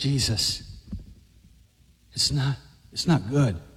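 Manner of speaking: low, soft devil-like whisper, leaning in close. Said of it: "and whispered in his ear".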